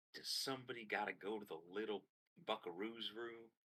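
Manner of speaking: very soft, close, hushed stage whisper. Voicing a medical robot leaning in close to a patient: half-whisper. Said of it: "leans in very close to you and whispers".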